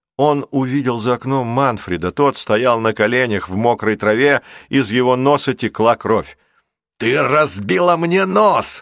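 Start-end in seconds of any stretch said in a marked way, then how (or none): 7.0-8.8 high, drawn-out shout. Narrator reading a driver who is trying to get up: shouting. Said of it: "закричал водитель Обливии".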